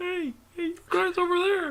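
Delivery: distant call, pitched very high, sounding far away. Calling out to others: voice as if far away. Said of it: "I'm making them like I'm far away".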